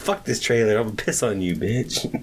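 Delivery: mock angry voice. Telling about the haunted trailer, the speaker quotes own past self, retelling being mad. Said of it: "because I was mad one day".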